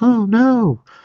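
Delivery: going way up high, woman's voice. Reading a comic aloud and voicing Hope's reaction: Hope voice. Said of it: "I'm sure that's what she sounds like".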